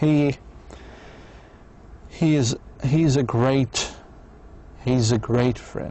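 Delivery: earnest, pausing between words. Explaining how sincerity sounds, the speaker gives an example: sincere, with small pauses. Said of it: "shows quite a sincerity... small pause between words".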